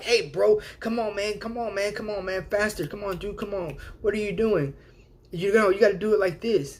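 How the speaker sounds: high, nagging, pushy, hurried, hounding bossy voice. Imitating a micromanaging boss standing over your shoulder, nagging boss voice. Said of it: "he's all like".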